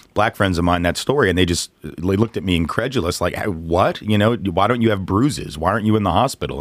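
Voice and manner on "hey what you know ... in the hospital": ordinary talk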